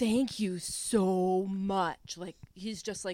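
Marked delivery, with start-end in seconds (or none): 0.0-2.2 mock very slow, gushing, deeply thankful tone. Retelling what a fan said after a show: imitating someone very thankful. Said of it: "so thankful".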